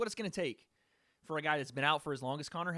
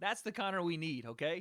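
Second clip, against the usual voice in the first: usual speaking voice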